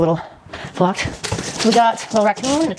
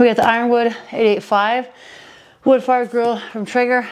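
breathless, winded, short of breath. Unboxing a heavy box on camera, the speaker announces the grill, out of breath. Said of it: "I'm out of breath".

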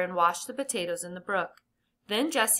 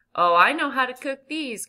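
loud, glad, cheerful cry, rising; 3 semitones higher, 6 dB louder than usual. Jesse, before dinner, cries out happily to the others. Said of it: "cried Jesse happily".

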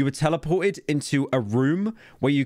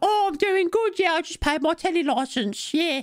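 put-on very high, chattering little kid voice. Speaker retells a Project Milo tech demo, voicing the kid's reply as Milo. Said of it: "And then the kids are".

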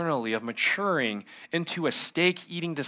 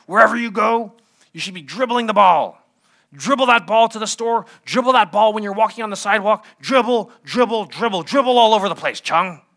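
raised, raspy coach voice; 6 semitones higher, 7 dB louder than usual. Quoting a man who once told him this about dribbling, imitating his raspy voice. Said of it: "His raspy voice was that, really like that".

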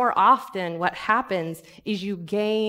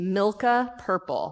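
plain

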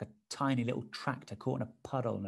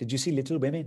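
put-on Indian accent, higher pitch; 3 semitones higher, 6 dB louder than usual. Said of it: "[INDIAN ACCENT]".

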